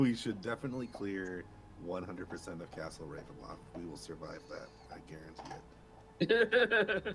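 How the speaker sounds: thick, heavy sarcasm.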